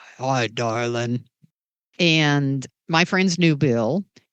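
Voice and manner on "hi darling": big, deep voice. Recalling a man who played jazz for you and your friends, in Bill's deep voice. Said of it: "and this deep voice".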